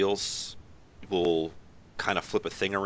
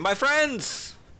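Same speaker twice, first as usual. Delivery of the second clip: loud excited voice, higher and louder; 4 dB louder than usual. Voicing a character greeting arriving friends: loud excitable voice. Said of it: "a loud, excitable voice will be".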